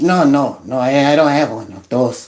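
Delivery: low, put-on Mexican-accented English. Acting out a man answering about a driver's license: Mexican accent. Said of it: "I use the Mexican accent right there".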